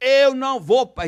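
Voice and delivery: furious, high, loud, slow outburst. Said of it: "já subiu a serra".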